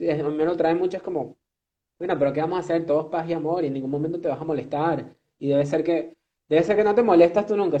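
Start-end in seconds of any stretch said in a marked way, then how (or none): none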